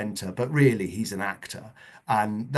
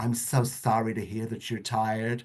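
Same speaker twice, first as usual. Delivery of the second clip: put-on, very Californian accent; 12 semitones higher, 5 dB louder than usual. Replying to a colleague's camp persona, the speaker puts on a Californian accent. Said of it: "we'd become very Californian".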